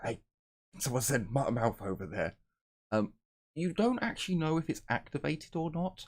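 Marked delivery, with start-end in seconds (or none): 0.0-2.3 whispered words. Voicing a character who whispers a message into a stone: whispering into a stone. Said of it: "you just whisper into it".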